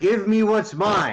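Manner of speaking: high, challenging, taunting battle yell. Casting a spell at the double doors in character: yelling. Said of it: "as I yell".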